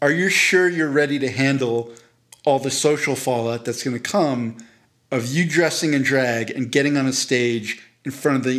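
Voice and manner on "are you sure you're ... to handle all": ordinary delivery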